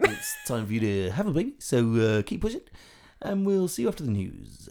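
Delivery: put-on radio DJ voice, sing-song patter. Joking to someone about being in labour, radio dj voice. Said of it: "More of that radio voice?".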